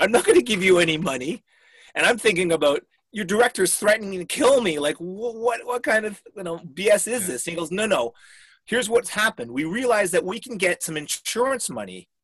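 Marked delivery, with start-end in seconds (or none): 0.0-1.4 acted-out laughing while speaking, louder. Retelling his own reply in a money dispute, retelling a laughing reply. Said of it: "like I was laughing".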